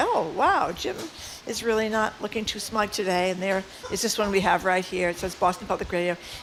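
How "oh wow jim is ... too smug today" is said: ordinary delivery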